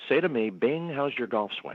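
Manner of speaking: mock whispering voice. Retelling what a comedian at the audience rail whispered: imitating someone whispering. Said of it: "whispers and says".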